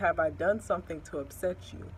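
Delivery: normal talking voice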